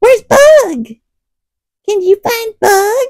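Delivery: squeaky, very high-pitched, cute kitty voice. Speaker asks Henry to find Bug, in a cute kitty voice. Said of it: "if I use my kitty voice".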